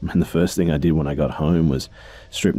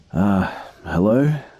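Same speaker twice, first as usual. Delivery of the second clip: mock sleepy, groggy, half-awake, just woken; 5 semitones higher than usual. Narrator woken by her phone, answering her dad in a groggy voice. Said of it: "I answered in a groggy voice".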